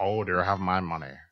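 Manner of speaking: put-on pimp voice. Picturing Morgan Freeman voicing a pimp, acting it out: Morgan Freeman pimp voice. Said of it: "He should just do the voice acting".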